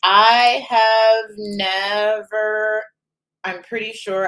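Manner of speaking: very slow, measured words. Saying that a shoe brand was never picked up: talking slowly. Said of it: "I'm talking slowly".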